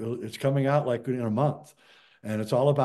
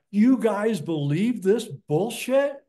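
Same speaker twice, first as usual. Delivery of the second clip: put-on scream, higher in pitch and louder; 8 semitones higher, 5 dB louder than usual. Retelling how a grandfather stood up during the moon landing: imitating a scream. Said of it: "stood up and screamed out".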